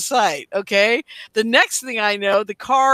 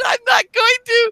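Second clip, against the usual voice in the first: very high, yelled shout; 13 semitones higher than usual. Retelling a car argument, the speaker refuses the man's demand; retelling a yell. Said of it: "we're yelling at each other in the car".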